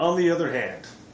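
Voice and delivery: high, loud, dramatic "on the other hand", booming "hand".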